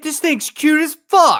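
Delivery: very high, loud, thrilled, excited shriek. Reacting to a cute fox picture: excited screaming. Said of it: "he's screaming that this thing is cute as fuck".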